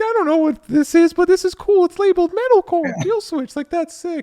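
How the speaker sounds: put-on very high, loud kid voice. Talking about kids first hearing a metalcore track, the speaker does a ten-year-old kid voice. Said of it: "ten year old voice".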